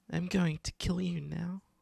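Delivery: put-on creepy, eerie small-child voice. Voicing a voice echoing on the wind to the players, very childlike voice. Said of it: "it's like a very childlike voice".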